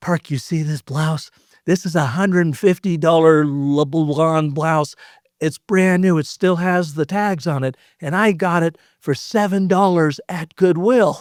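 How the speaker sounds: imitated slow whisper. Quoting what a woman whispered to the speaker, retelling a whisper. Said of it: "she whispers to me".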